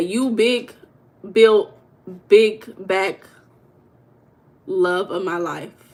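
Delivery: thick sarcasm throughout, slow drawl. Showing how to say the sarcastic version after saying it straight, sarcastic. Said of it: "that's sarcasm".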